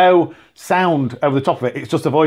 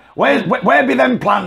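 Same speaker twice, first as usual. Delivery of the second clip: put-on pirate voice, higher pitch; 7 semitones higher than usual. Redoing the same line again, speaker slips into a pirate voice. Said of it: "he's not a pirate".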